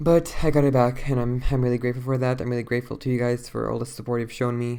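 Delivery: worn out, drained, lifeless, dead tired voice. Talking to your viewers, drained and exhausted. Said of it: "I'm sorry I sound so drained and dead".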